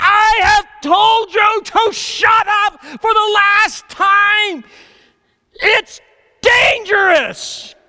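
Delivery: shrieking, very high-pitched and very slow. Retelling losing temper at kids in the car: imitating screaming at them. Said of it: "I start screaming at them".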